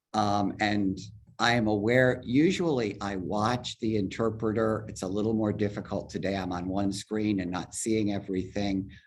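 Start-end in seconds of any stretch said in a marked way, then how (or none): 4.8-6.3 very fast, hurried delivery. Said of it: "I feel like I'm talking very fast".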